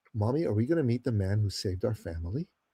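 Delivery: put-on hushed, soft small boy's voice. Recounting a boy's question to his mother: imitating a hushed boy. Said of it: "He was like really like like hushed".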